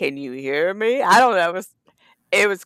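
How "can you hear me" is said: eerie, creepy demon-like voice. Retelling a voice that came in while inputting words; creepy demon voice. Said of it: "it was like a freaking demon voice came in".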